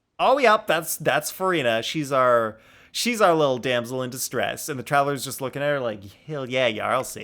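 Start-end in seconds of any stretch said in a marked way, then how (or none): 6.3-7.2 cocky, smug, self-satisfied tone. Voicing the Traveler looking at the damsel in distress: smug voice. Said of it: "That sounded so smug".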